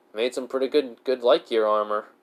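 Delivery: ordinary delivery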